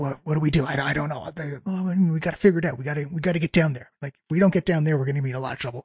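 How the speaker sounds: whispering voices. Voicing whispers heard echoing from around the corner: whispering voices. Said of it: "You hear whispers".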